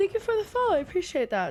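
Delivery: words spoken mid-yawn, pitched very high. Thanking a viewer for the follow on stream, the speaker talks while yawning. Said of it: "Sorry I'm yawning".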